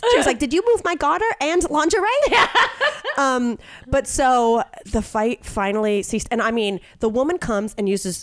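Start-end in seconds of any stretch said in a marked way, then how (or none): 0.4-2.1 squeaky, high-pitched cartoon girl voice. Retelling a woman's line in a verbal fight, Betty Boop voice. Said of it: "Two Betty Boops".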